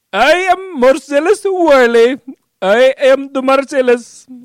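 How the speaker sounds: poor partial Indian accent, high-pitched and loud. Asked to do Marcellus for a bit, attempting a Marcellus Wiley impression. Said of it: "Sounds like half Indian".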